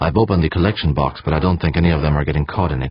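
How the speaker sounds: ordinary delivery, nothing marked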